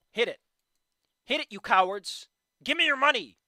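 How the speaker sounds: high, loud hollering. Demanding viewers hit the Patreon goal: yelling at viewers. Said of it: "you can't just start yelling that at people".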